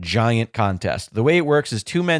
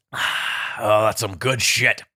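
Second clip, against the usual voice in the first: put-on drunk-sounding voice, pitched much lower; 3 semitones lower than usual. On a wrestling podcast, tasting tea they were given; Vince McMahon impression. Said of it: "for some reason you're drunk all of a sudden".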